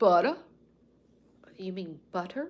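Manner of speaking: put-on Northern accent on butter. Retelling an everyday morning exchange, replying in a mock Northerner accent. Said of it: "me trying to sound like a Northerner".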